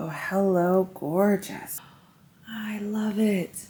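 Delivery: delighted, soft, hushed whisper. Speaker reacting to a hat while Wolfie is asleep, whispering. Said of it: "I'm whispering so Wolfie's asleep".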